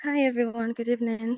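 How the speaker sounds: sweet-sounding voice. Greeting everyone after the host calls on her to speak, in a sweet voice. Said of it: "good evening with sweet voice".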